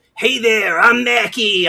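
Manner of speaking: blend of New York and Boston accents. The speaker demonstrates the accents they add for narration characters: New York-Boston accent. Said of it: "between a New York and a Boston accent".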